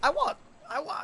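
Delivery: sudden voice crack, breaking very high. Telling folks about a Deinosuchus stat, voice cracking. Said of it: "that was a voice crack".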